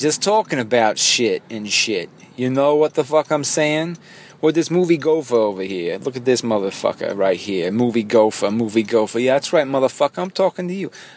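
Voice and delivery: put-on New Jersey accent creeping in. Rambling about casual moviegoers while recording unedited, in a Jersey accent. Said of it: "I'm gaining a Jersey accent over here".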